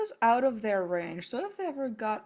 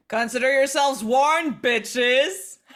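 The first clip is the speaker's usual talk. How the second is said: very loud, booming, amplified-sounding shout; 10 dB louder than usual. In a game, a character casts thaumaturgy to warn others: magically amplified loud voice. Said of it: "give me that that loud voice thing again".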